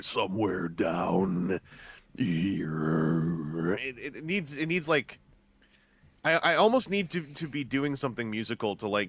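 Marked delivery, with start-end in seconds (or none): 0.0-3.7 very low, deep, drawn-out croak. Asked for their deepest voice, showing a very deep croaky voice. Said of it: "What's your deepest voice ... it gets croakier. Somewhere down here".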